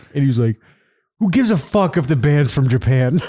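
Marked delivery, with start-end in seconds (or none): 1.2-3.2 high-pitched hollered yelling outburst. Retelling how Justin came on a show to yell: imitating Justin yelling. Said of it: "to yell at me".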